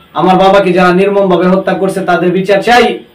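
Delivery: ordinary delivery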